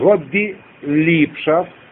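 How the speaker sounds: very slow, spelled-out delivery. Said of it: "я медленно продиктую".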